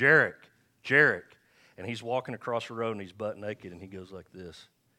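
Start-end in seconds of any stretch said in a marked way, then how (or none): 0.0-1.2 put-on very loud, high, firm, stern grandfather holler. Hollering at Jarek as he crosses the road, in firm, stern Grandpa's voice. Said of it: "I get firm and stern in Grandpa's voice".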